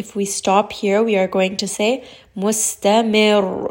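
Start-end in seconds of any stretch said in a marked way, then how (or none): 2.4-3.7 rising stress on final syllable -mir. Explaining stopping on a word with shadda: pressure on last syllable of mustamir. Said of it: "Raise the voice a little bit, apply a little bit of pressure".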